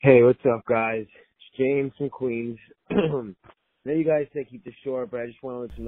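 glum, depressed, down voice, a bit loud. A caller from Queens greets the hosts, sounding sad. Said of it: "He sounds fucking sad as shit".

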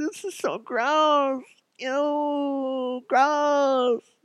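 put-on very high teenage valley girl voice, drawn out. Describing picking up a worm while screaming inside, teenage valley girl voice. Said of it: "That's my teenage valley girl".

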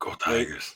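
hushed, breathy cartoon monster voice, cheering. Cheering for the Tigers after a game pick: sounding like Cookie Monster. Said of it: "I sounded like Cookie Monster more".

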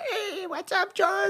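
tiny, very high voice, drawn out slowly. Retelling how he answered when you said hey to him on a trip, imitating Mike's little voice. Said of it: "Avec sa petite voix".

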